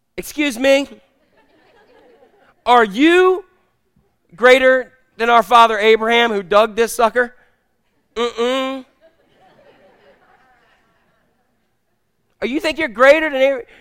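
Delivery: thoroughly ticked off, indignant, annoyed tone. Retelling the Samaritan woman at the well speaking to Jesus: mock-annoyed Samaritan woman. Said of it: "here's my best imitation of a Samaritan woman ticked at the well".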